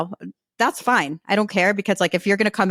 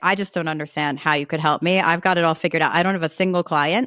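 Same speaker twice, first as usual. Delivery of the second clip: ordinary talk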